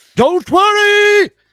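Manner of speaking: huge, booming, loud, high-pitched voice. A game master voices a character arriving before the players, Reginald's booming voice. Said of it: "this booming voice of like".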